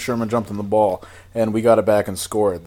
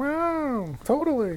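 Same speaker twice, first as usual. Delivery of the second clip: very high, soft little cat voice, stretched wow; 7 dB quieter than usual. Speaker acts out a cat's reply to its owner, in a cat voice. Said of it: "That's my cat voice".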